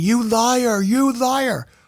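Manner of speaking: very slow, drawn-out, high angry yell. Retelling how Republicans yelled during the State of the Union: imitating someone yelling. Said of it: "were yelling".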